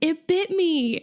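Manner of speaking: high, slow, startled yell.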